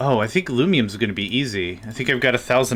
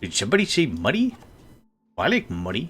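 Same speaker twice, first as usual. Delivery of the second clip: bad cartoon crab voice, pitch swooping up and down. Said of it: "It's not a good impression".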